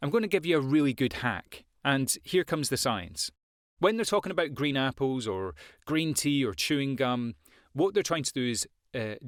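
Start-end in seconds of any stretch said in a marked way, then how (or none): none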